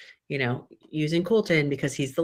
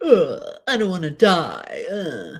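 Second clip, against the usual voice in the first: put-on loud, drawn-out babyish whine, swooping up and down; 3 semitones higher, 5 dB louder than usual. Imitating a contestant who went full baby: imitating someone whining like a baby. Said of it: "He just went full baby".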